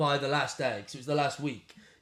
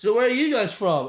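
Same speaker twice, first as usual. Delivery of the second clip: put-on loud, high, sloshed drunken patter; 7 semitones higher, 9 dB louder than usual. Retelling trying to recover a gig while bleeding: imitating his drunk self. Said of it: "I'm pissed, covered in blood".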